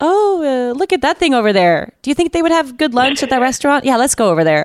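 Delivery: offhand dismissive tone. Retelling how dad answered emotional talk: imitating dad brushing it off. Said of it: "just kind of wander away and ignore everything I said".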